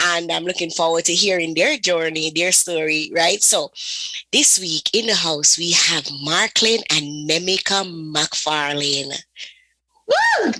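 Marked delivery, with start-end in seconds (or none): 3.4-10.5 slow, put-on on-air radio announcer voice. Introducing this week's couple in the house: put-on radio voice. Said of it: "I'm trying to practice my radio voice".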